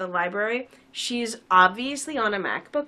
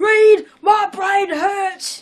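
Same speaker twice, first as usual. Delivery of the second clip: yelled high-pitched, loud and slow; 11 semitones higher, 11 dB louder than usual. Joining in the Ben impersonation: Mister Gumby voice. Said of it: "You sound like Mister Gumby".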